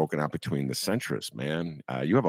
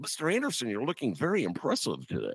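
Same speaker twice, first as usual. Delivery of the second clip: laid-on flattering suck-up voice, very high and swooping; 10 semitones higher, 3 dB quieter than usual. Retelling how a young intern greeted Mister Anderson: Eddie Haskell-style suck-up voice. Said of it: "Eddie Haskell type".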